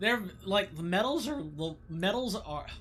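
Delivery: voice cracking and breaking mid-phrase. While playing a game, the speaker's voice cracks mid-sentence. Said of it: "what a voice crack".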